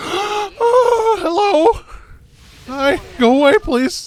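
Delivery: startled voice breaking, very high, drawn out. Startled speaker tells whatever scared them to go away, voice cracking. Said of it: "it made my voice crack like I was in puberty again".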